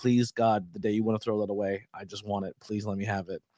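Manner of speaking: put-on heartfelt, earnest, begging tone. Retelling begging gas station staff for a display: imitating own pleading. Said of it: "be like".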